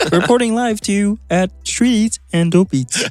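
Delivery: put-on cartoon frog voice. Offering podcast voiceovers, doing a Kermit the Frog voice. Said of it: "Kermit the Frog here".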